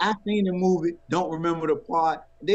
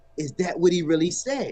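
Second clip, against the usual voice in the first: ordinary delivery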